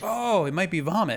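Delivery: a little surprised.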